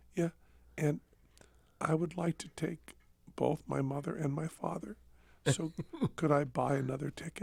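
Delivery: put-on timid, shy voice. Recalling calling a radio station to ask for another ticket; retelling in a timid voice. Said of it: "in a very, very timid voice and said".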